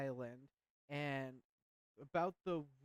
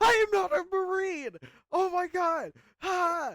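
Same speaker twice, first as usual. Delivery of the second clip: very high, very loud, shrill, outraged, drawn-out scream; 15 dB louder than usual. Retelling how a man reacted when asked if he was a marine, retelling a scream. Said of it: "And he's like screaming".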